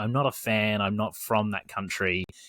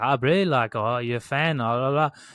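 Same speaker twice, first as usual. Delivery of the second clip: put-on strong, laid-on-thick South African accent; 3 semitones higher, 5 dB louder than usual. Retelling what a man said when he came over to them, strong south african accent. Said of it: "talking to me in his strong South African accent".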